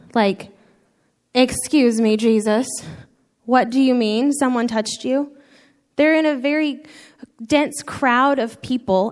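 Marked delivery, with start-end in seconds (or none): 1.3-5.3 play-acted, exasperated, disbelieving, eye-rolling incredulity. Acting out the disciples answering Jesus in a dense crowd: acting out eye-rolling exasperation. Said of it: "the disciples' eye roll game would be very strong".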